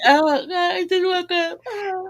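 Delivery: mock very slow, very high words through yawn. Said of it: "Sometimes I'm literally yawning as he's sa-".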